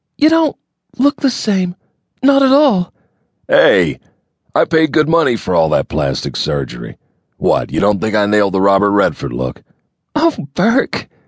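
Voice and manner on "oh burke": very high, giggly voice. After his joke about plastic surgery, she answers him giggling. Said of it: "she giggled".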